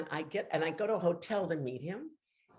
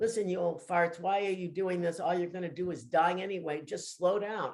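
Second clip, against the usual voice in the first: normal talking voice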